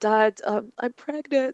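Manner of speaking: put-on tearful voice. Retelling telling her dad she was pregnant, imitating her own crying. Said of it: "I was crying".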